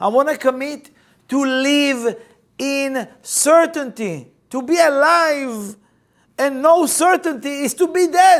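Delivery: all-out loud screaming. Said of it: "I'm screaming".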